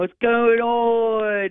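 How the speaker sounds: fake Baltimore accent, "on" stretched. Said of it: "There's your Baltimore accent for you".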